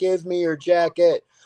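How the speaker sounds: put-on high, loud kid's voice screaming. Recalling a kid at the fights yelling at every fighter, imitating a kid screaming. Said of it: "this kid is screaming at them like".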